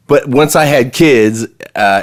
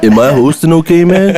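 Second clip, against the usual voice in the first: put-on stoner voice, higher; 5 semitones higher than usual. Joking about hosting the talk: Cheech Marin impression. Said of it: "What is it, Cheech Marin showed up?".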